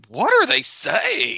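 mock shrill, very high-pitched yell. Speaker retells how someone reacted, retelling a yell. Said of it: "puts his arms up and like yells".

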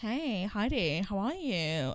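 slow, flamboyantly camp delivery. Retelling a first date's greeting, imitating his camp voice. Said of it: "he's already got this camp voice".

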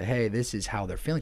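ordinary talk

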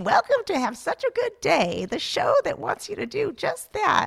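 put-on very high, cranky, crotchety old-lady voice. Joking about still hosting the show decades from now: crotchety old lady voice. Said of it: "crotchety, like, old ladies".

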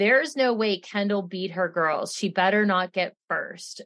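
ordinary delivery

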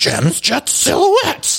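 terrible put-on voice, very high, squealed like a puppet. Asked to do an impression, the speaker performs a terrible Luann impression. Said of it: "that's my terrible impression of Luann".

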